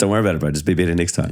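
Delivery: mock sarcastic, joking reassuring tone. Retelling a teammate's joking answer on the golf course: imitating a sarcastic joking reply. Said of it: "as sarcastic as it sounds and as jokingly as it sounds".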